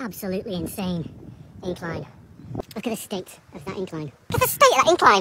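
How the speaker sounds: high-pitched castrato-like voice, rising upward. Cycling up a steep hill and commenting on it: high-pitched voice like a castrato. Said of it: "made my voice go up like a castrati".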